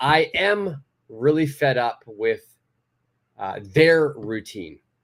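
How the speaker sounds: their and am stressed, spoken slowly. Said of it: "I would say their".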